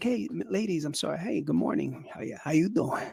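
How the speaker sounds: very soft, hushed, smooth, suave gentlemanly charm. Retelling greeting the counter staff about a seat: imitating own debonair gentleman manner. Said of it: "me being the gentleman debonair that I am".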